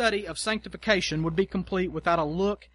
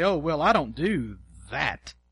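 smug and disbelieving; 3 semitones lower than usual. Describing false spiritual pride, the speaker demonstrates a reply in a smug, incredulous voice. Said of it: "in a smug, almost incredulous voice you say".

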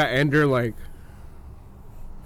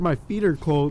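plain

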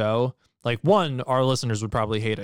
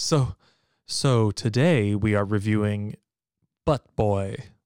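serious critic voice; 3 semitones lower than usual. Opening the episode's review for the audience in an NPR voice. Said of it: "that NPR voice that I was just doing".

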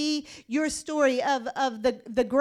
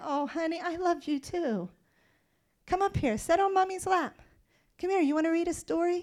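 soft, tender, doting, warm motherly voice; 3 semitones higher, 5 dB quieter than usual. Picturing a mother answering her child: imitating a loving mother. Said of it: "you're gonna be".

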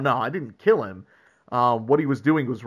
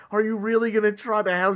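put-on high, weepy, crying little-girl voice; 9 semitones higher than usual. Recapping a story, voicing a little girl who needs help finding her cat: imitating a crying little girl. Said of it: "She's like crying".

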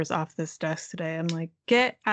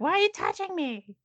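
very high, indignant, angry cat voice; 11 semitones higher than usual. Retelling how the cat reacted to being put out: imitating an angry cat. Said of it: "She was so pissed".

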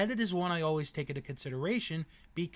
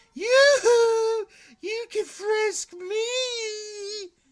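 put-on high, booming, shrill drunken yell, "me" stretched; 8 dB louder than usual. Recalling frisking everyone, a very drunk woman called out; retelling a drunk woman's yell. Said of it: "And she's yelling".

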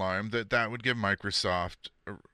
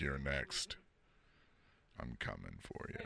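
hushed, whispered voice; 10 semitones lower, 14 dB quieter than usual. Acting out Death looking at pictures online: voicing Death. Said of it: "Death is standing in the corner".

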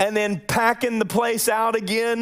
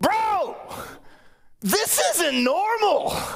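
acted loud, emphatic, high-pitched, drawn-out exclaim; 9 semitones higher than usual. Quoting what he said right there in the truck, retelling someone talking loudly. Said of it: "like real loud".

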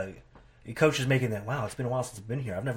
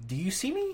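put-on confused wrestler voice, higher; 14 semitones higher than usual. Imitating a confused wrestler being booed: confused Cena voice. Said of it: "I want confused Cena".

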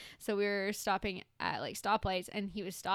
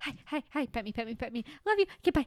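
put-on dog voice, much higher pitched; 4 semitones higher, 3 dB louder than usual. Describing her dog, the speaker does an impression of the dog. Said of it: "my impression of her is like".

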